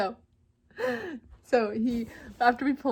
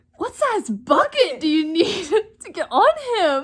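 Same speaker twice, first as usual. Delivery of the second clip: mock grave, booming, dead-serious, high and loud; 5 semitones higher, 9 dB louder than usual. Retelling how a man got all serious asking about the horse, retelling a serious question. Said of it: "gets all serious".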